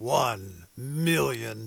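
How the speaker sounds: deep, big movie trailer announcer voiceover voice. Radio host announcing a fundraising challenge amount, in a movie announcer voice. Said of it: "It is hard not to say that in movie announcer voice".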